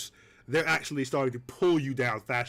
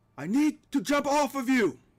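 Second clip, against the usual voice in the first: very high, shouted in-character yell; 12 semitones higher than usual. Voicing a character mid-fall who yells to another: NPC yelling. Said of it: "and he yells".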